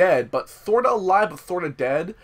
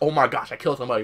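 mock panic in a lower put-on voice; 4 semitones lower than usual. Retelling an actress's reaction after her character kills someone, imitating someone panicking. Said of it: "she was, like, panicking".

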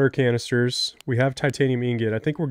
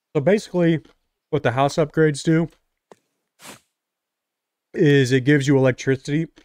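speech with food in mouth; 3 semitones higher than usual. Explaining a game's house upgrades while eating: talking with food in mouth. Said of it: "I got food in my mouth".

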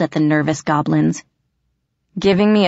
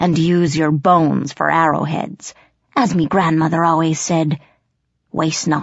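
ordinary delivery

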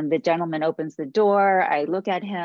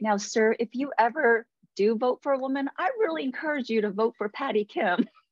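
utterly earnest, polite, most sincere tone, pitched up; 6 semitones higher than usual. Retelling a partner's words to a man on a porch: imitating Michael, most sincere tone. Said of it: "talking to the guy in the most sincere way".

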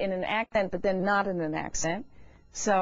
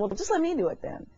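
acted, pitched-up sarcastic tone; 6 semitones higher than usual. Recounting a phone call after their singers were rejected, retelling a sarcastic reply. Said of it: "I was being sarcastic actually on the phone".

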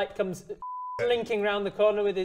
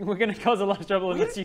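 usual speaking voice

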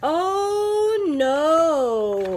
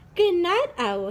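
ordinary delivery

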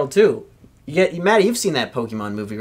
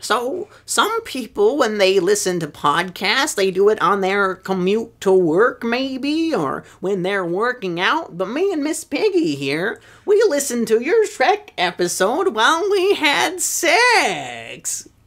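"sex" with raised pitch and drawn out; 6 semitones higher than usual. Leaving a joke voicemail for a podcast, in a Kermit the Frog voice. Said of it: "Kermit the Frog here".

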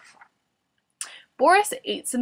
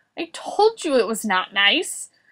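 ordinary delivery

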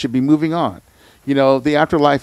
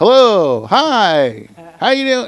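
friendly sing-song, pitched up, hi stretched long; 8 semitones higher, 3 dB louder than usual. Retelling voices heard on spirit boxes in a basement: imitating friendly spirit-box voices. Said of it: "Like this".

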